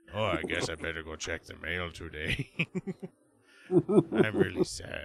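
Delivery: put-on cartoon character voice played as an old man. Retelling a cartoon character checking the mail: old Strong Bad voice. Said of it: "it's like the old version of Strongbad, and he's like".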